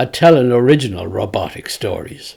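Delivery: ordinary delivery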